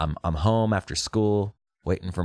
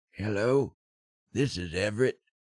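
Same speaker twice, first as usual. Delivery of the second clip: put-on old man's grandpa voice; 2 semitones higher, 5 dB quieter than usual. Calling the cable company pretending to be grandpa, in a put-on old man's voice. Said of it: "acted like my grandpa".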